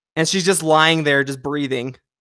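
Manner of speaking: normal talking voice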